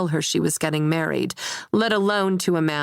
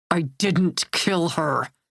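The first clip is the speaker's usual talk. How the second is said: words forced out between clenched, gritted teeth. Narrator reads Ian's retort to the first-person narrator, through gritted teeth. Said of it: "Ian says through gritted teeth".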